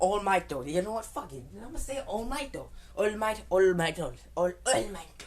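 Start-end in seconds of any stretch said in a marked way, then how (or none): 3.0-5.2 put-on Japanese accent with raised voice. Talking about a show, saying a character's name in a Japanese accent. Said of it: "I'm about to say it in a Japanese accent".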